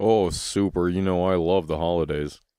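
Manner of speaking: unenthusiastic. Answering how the holiday season is going: unenthusiastic. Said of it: "You sound so thrilled".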